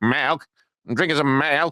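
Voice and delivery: put-on high-pitched, old-timey old-west cowboy voice. Acting out a kid answering a man who asked what he's drinking, old-timey cowboy voice. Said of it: "it sounds like an old timey cowboy".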